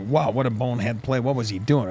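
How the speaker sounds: ordinary talk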